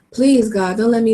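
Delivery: ordinary delivery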